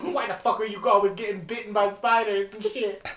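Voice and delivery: put-on heavy, laid-on Brooklyn accent. Speaker imitates how she sounds, saying her line: heavy Brooklyn accent. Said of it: "I got a really heavy Brooklyn accent".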